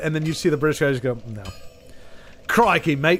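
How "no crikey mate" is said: bad fake put-on Australian accent. Describing British guys imitating Australians, doing a bad fake Australian accent. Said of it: "well that's I don't know what the hell that was".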